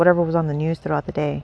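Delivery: ordinary delivery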